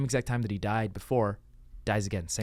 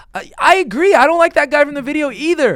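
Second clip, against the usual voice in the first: put-on very high, very loud, sincere, earnest tone; 17 dB louder than usual. Acting out replies to hateful comments as if taking them kindly: imitating sincere thanks. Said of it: "in a sincere enough way that it doesn't read sarcastic".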